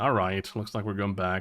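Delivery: ordinary delivery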